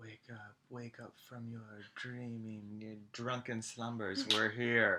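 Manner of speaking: super gentle, calming ASMR-style voice. Retelling gently waking a drunk man on arrival, ASMR-style gentle voice. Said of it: "A S M R".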